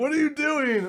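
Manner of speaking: acted, very high, shrill, panicked, alarmed shriek. Recounting a game session where everyone yelled, retelling their screaming. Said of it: "Everyone's screaming at me like".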